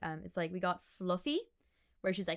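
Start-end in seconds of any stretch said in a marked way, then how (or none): none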